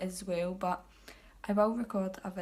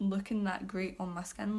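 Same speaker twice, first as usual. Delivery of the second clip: ordinary talk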